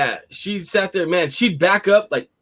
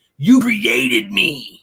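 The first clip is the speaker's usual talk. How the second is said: low, growled words; 4 semitones lower than usual. Recounting a girl who growled at the speaker, retelling a growl. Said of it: "growling at me and saying".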